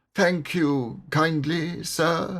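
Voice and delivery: weak, faint, feeble voice, high and slow. Reading a story aloud, a character thanking his rescuers: feeble voice. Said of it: "said Toad in a feeble voice".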